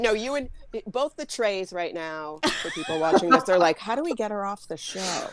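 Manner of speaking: ordinary talk, nothing marked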